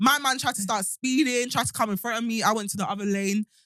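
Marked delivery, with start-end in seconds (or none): none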